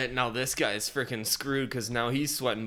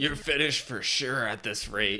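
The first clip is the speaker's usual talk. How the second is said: mock menacing, intimidating voice. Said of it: "like, intimidation voice".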